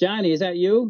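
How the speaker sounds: high, loud calling yell. Telling about hearing steps at home, he acts out his wife calling out: retelling his wife's yell.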